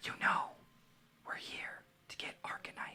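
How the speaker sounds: quiet whispering. With her right there, a character answers the question, whispering. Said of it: "Just fucking whisper it".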